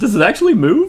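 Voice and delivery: high, loud, surprised disbelief. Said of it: "I was like".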